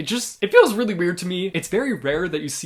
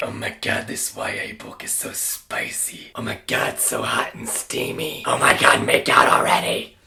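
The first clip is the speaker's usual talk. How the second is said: drawn-out, creaky, gushing, swooning tone; 4 semitones lower than usual. Mocking grown adults who gush over spicy YA books: imitating gushing adult readers. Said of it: "just pretending to be that way".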